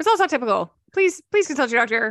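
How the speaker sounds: rapid-fire ad disclaimer voice. Mocking the end of a diet ad, in a super-fast disclaimer voice. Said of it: "that voice that speaks super, super quickly".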